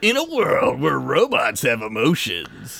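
1980s-style movie-trailer announcer voice. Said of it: "That sounds like an eighties movie".

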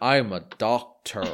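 put-on American accent. Praising the other speaker's accent, repeating the line in put-on American accent. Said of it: "better than Benedict Cumberbatch's American accent".

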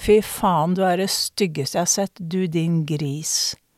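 ordinary delivery

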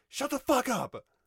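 very loud, very high, shrill furious yell. Retelling a character telling a screaming girl to shut up: imitating a loud angry yell. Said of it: "really loud, really angry".

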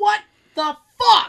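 very loud, high-pitched yelling outburst. Recounting getting stuck in a shuttle bus door: retelling own yell. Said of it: "So I was literally like yelling".

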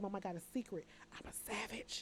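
very quiet, hushed whisper. Retelling how Mumu tells a secret: imitating Mumu whispering. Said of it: "She whispers in my ear and say".

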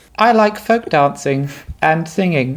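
put-on grown man's high little child voice. A grown man plays a child in a scene, speaking in a child's voice. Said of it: "doing the voice of a child".

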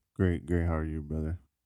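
insincere, put-on, fake-sounding sarcastic tone. Host greeting a guest at the start of a show, sarcastic greeting. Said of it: "It just sounded like sarcastic".

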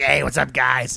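low, hoarse, raspy voice. Telling a story about a guy, imitating his raspy voice. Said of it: "He has like this raspy voice".

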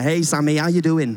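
put-on Lancashire accent. Show how an amazing man of faith from Preston greets you, in Jeffrey's Lancashire accent. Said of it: "so he talks like this".

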